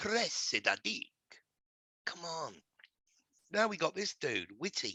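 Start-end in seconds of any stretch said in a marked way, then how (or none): 0.0-1.1 put-on Italian accent on a name. Joking about a police chief's name, saying it in a put-on Italian accent. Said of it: "Say that with an Italian accent".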